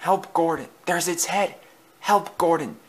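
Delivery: hushed, high half-whisper with no voice. An engine, with the monster outside the door, calls to another engine; half-whispering. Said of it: "he whispered".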